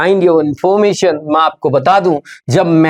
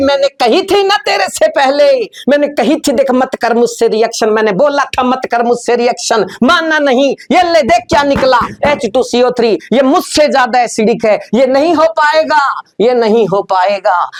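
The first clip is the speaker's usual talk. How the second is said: angry, high-pitched, shrill shouting; 7 semitones higher than usual. Explaining why a chemistry reaction fails, voicing phenol, shouting as phenol. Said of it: "क्यों चिल्ला रही है?".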